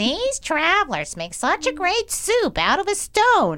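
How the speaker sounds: put-on very high, swooping elderly woman character voice. Telling the Stone Soup story, voicing the old lady at its end: old lady voice. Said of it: "I always do this story in voices, so I'm going to do voice".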